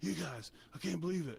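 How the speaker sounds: acted angry yell, high, rough. Retelling how the music teacher yelled at them: imitating an angry yelling teacher. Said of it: "yelling at us and getting us in trouble".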